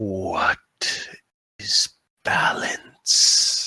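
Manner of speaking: very deep yet wispy, creaking voice. Voicing a root that wraps around a character's ankle: deep wispy creaking voice. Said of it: "very kind of deep, but still wispy, creaking voice".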